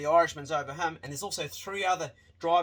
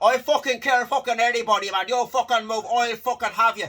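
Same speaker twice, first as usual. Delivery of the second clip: put-on strong, loud, pitched-up Dublin accent; 6 semitones higher, 7 dB louder than usual. Retelling what an irish guy said on a bus: imitating a dublin accent. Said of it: "A real dubbo sort of accent".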